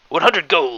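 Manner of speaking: high, dog-like barking voice. Narrator voices a strange creature's reply; dog-like barking voice. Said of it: "The creature says in a dog-like bark".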